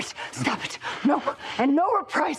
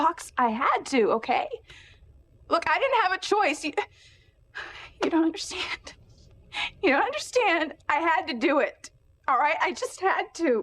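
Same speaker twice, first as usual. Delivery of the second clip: high, grief-stricken, heartbroken pleading tone; 5 semitones higher than usual. A character answering a demand to explain herself, very sad. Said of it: "It's like the saddest thing in the world".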